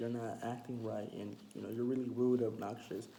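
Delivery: ordinary delivery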